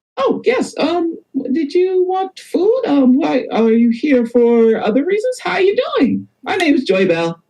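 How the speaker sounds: very high, swooping female gnome character voice. Voicing a female gnome who greets guests and asks about food: female gnome character voice. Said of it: "female gnome says".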